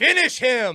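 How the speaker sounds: high, loud, slow, booming video game announcer yell.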